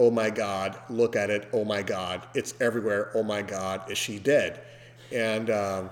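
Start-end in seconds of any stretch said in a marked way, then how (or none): none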